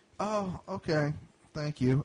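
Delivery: mumbled delivery with words running together. Retelling a woman's reply after trying to buy a door at a comic book shop, imitating someone mumbling. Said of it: "she kind of mumbles".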